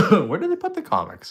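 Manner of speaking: very high, fast squeaking voice. Searching for the comics, the speaker's voice goes squeaky. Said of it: "As my voice goes squeaky".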